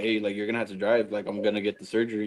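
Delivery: ordinary delivery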